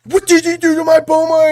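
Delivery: mock furious, angry, all-out full-power outburst. Retelling how another speaker mimicked Vegeta getting angry: imitating Vegeta angry. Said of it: "You were like".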